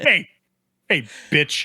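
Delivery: put-on threatening voice. Imitating a terrorist in a film shaking his gun at a grandma: imitating a gun-waving terrorist. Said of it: "shakes the gun at her like".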